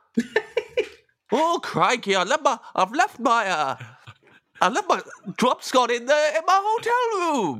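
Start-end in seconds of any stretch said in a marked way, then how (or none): 1.3-7.6 very high-pitched, slow, put-on Welsh accent. Doing a requested impression of a Welshman leaving something behind: impression of a Welshman. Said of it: "do an impression of a Welsh man".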